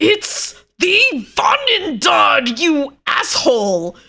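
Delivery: shrill, very loud, high, furious giant voice. Game master voices a giant answering an annoying character, angry giant voice. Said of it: "he angrily says".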